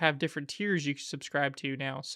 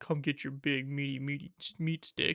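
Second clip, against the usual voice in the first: sultry, seductive come-on announcer voice; 3 dB quieter than usual. Retelling a loud gas pump ad: imitating a seductive ad voice. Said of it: "this really seductive voice".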